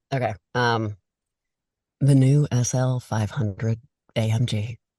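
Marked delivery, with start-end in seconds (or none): 2.0-4.7 slow radio ad announcer voice. Asked how they voice car ads, the speaker reads a model name: radio car-ad announcer voice. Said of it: "like slang a Mercedes Benz to me like on the radio".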